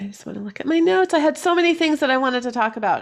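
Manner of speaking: rattled-off, very fast talk. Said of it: "I think I'm talking really fast".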